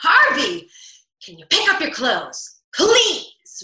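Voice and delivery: mock, loud, deliberate reactive tone, words drawn out. Acting out what they might say to him, in a mock reactive tone. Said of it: "I can say in my reactive tone".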